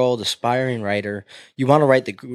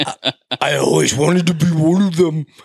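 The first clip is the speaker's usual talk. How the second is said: very slow, drawn-out voice; 4 semitones higher, 4 dB louder than usual. Imitating the imagined author of a magazine article: voice of the imagined article author. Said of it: "That's her voice".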